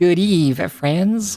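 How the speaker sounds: nasally nerd voice. Voicing a guy the other person has the hots for, in a nasally nerd voice. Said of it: "We'll give him a nasally nerd voice".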